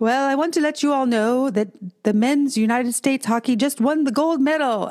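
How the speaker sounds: put-on little Scottish brogue, pitched high. Quoting the reverend in the sanctuary, in his scottish brogue accent. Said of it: "in his little Scottish brogue accent".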